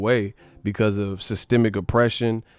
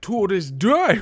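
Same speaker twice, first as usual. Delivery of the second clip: squeaked out and said wrong; 10 semitones higher than usual. Retelling someone's weird-mouthed impression: mocking a bad Wilder impression. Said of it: "that Wilder impression was horrible".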